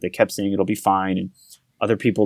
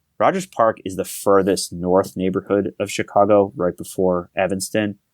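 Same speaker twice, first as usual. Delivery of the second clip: ordinary delivery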